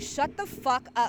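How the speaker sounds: play-acted, irritated, fed-up outburst, said aloud. Speaker acts out what they said aloud to people getting on their nerves, retelling saying it out loud. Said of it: "I was out loud saying".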